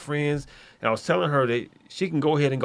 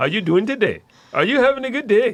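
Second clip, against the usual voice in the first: put-on Indian accent, broad, raised and high; 8 semitones higher, 6 dB louder than usual. Speaker demonstrating his go-to impression, an Indian accent impression. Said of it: "Indian guy, truthfully, was my go to".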